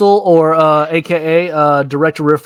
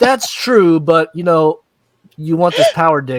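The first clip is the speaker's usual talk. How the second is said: ordinary talk, nothing marked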